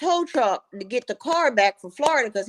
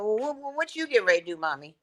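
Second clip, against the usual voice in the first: talking in a pet dog's voice; 5 dB quieter than usual. Retelling what her dog seemed to ask her: voicing her dog talking. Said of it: "He like".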